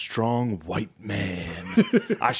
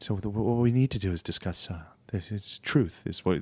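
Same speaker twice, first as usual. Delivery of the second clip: put-on public-radio voice. Mocking how a man talks in a debate, doing an NPR voice. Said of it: "he has that N P R voice".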